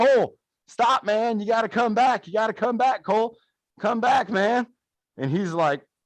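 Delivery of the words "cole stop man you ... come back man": put-on yell, calling out but kept contained. Retelling calling a friend back during a race: imitating own past yelling. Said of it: "I'm yelling at him saying".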